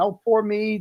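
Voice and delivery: small, fake innocent, pitiful pleading voice. Saying how one would have acted in court to win sympathy: mock sad, pitiful plea. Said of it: "I would have played the small, like, innocent person".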